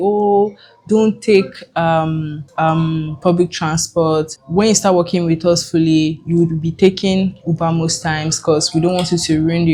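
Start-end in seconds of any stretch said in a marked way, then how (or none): none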